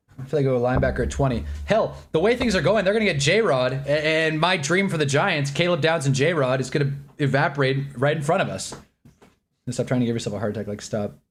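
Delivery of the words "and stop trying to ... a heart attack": rapid-fire, rushed ranting delivery. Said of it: "Am I talking fast?".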